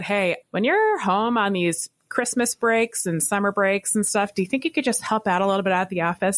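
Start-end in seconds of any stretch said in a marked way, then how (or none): none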